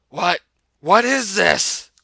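raspy, very loud, high-pitched cry. He looks up after throwing up and sees her smiling sweetly; raspy voice. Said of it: "He spoke in a raspy voice".

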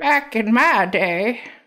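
put-on elderly person voice. Asked to try an old people voice, the speaker gives it a go, old people voice. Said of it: "I don't really have a good old people voice".

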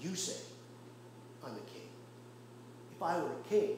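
low, soft, very calm voice. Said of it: "he says very calmly".

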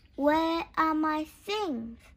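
upset, high-pitched, loud crying out. The narrator finds his toy box filled with someone else's things: crying out. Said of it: "I cried".

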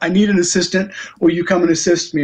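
ordinary talk

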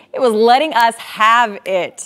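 loud, drawn-out, played-up broadcaster voice. Showing a sunrise video, quoting a meteorologist colleague: Troy impression. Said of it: "Was that a good Troy impression?".

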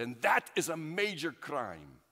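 imitated shout. Speaker recounting what an officer said to him, retelling the officer's shout. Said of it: "he shouted".

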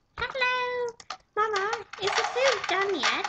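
put-on very high, childlike little girl voice. Told during a game to switch to a little girl voice. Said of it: "Now put on your little girl voice".

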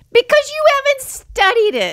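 shrill, swooping, high-pitched yell at full blast. In a conversation about a controversy, speaker snaps back at the other, yelling. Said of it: "I didn't mean to yell at it".

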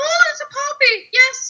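really excited, very high squeal. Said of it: "I got really excited".

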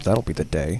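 muttered under the breath. Retelling a character's reply from an episode; under his breath. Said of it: "under his breath".

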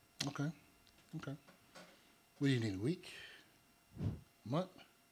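soft, hushed, subdued, understated pleading.

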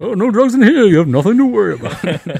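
comic-book villain voice. Recalling a movie scene he copies, the speaker does a Bane impression. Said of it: "he does a Bane impression".

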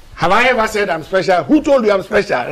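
mock exploding, very irritated, annoyed outburst. Interviewer retells how the politician exploded at his first question, retelling a very irritated outburst. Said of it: "in a very irritated voice".

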